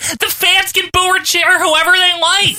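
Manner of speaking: high, whiny announcer voice, way up high.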